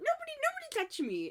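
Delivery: put-on very high, wide squeal in an old woman voice.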